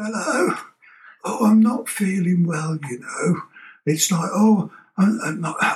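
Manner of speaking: put-on sick voice. Describing people phoning work to pull a sickie, put-on poorly voice. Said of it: "they put their poorly voice on".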